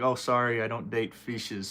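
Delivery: ordinary delivery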